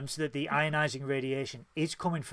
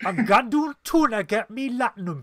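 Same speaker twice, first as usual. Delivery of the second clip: put-on Geordie accent, much higher and louder; 8 semitones higher, 8 dB louder than usual. Asked which race could have a Geordie accent, a speaker voices a Ferengi: Geordie accent. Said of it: "could have a Geordie accent?".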